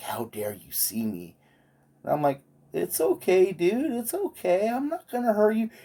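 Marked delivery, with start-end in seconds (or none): 0.0-1.3 put-on indignant, angry creature voice, lower, quieter. Retelling a creature's reaction on being spotted, mock-pissed creature. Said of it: "And he was pissed".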